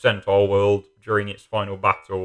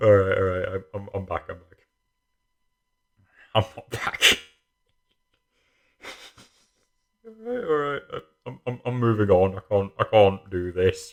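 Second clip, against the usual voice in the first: talking through bursts of laughter, giggly and swooping. On the third take of a recording, unable to stop laughing, laughing while talking. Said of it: "I cannot get through it without bursting out in laughter".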